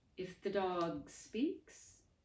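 shaky, trembling voice with forced casual ease. Reading a novel, a doctor asks a nervous question: trembling voice, forced casual. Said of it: "tried to make her trembling voice sound casual".

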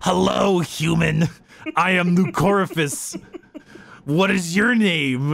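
slow, condor-like big bird voice. Retelling how a character talked to a comm officer: Lycorifus condor-like voice. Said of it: "talks in this very like kind of condor-y".

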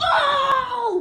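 high, loud, ecstatic cheering and yelling.

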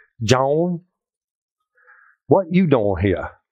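put-on backwoods deep Southern accent. Retelling how a woman at the door greeted joan: backwoods deep southern accent. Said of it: "That's how she talked. Backwoods, deep woods Southern".

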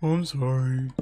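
low-pitched voice. On a game stream, [name] is asked to say the apology in his low voice. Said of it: "Do the I'm sorry in your low voice".

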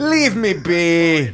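put-on, drawn-out Jamaican accent throughout. Speaker shows how they sometimes talk amongst themselves, in a jamaican accent. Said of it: "Sometimes we do it in Jamaican".

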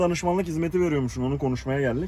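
ordinary talk

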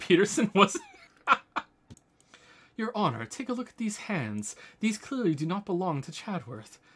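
plain

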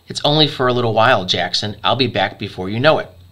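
ordinary delivery, nothing marked

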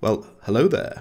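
wise, sage movie mentor voice. Break off from reading an update out to your listeners and greet them in an Obi-Wan Kenobi voice. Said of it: "I have to say it in the Obi-Wan Kenobi's voice".

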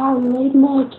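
bizarre, silly put-on voice, pitched way up. Voicing a line during a game, in a really weird voice. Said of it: "that was the weirdest voice I've ever done".

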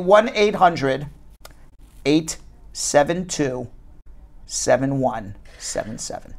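very slow delivery. Repeating the sponsor's phone number once more for listeners, very slowly. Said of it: "And I'll say it very slowly".

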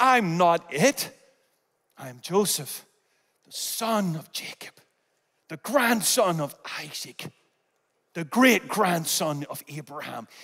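private, low, mumbled, insistent mutter. Retelling the story, the speaker voices joseph answering, muttered under his breath. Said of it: "Joseph goes under his breath".

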